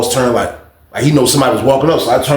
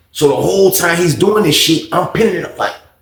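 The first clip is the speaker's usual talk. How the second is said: usual speaking voice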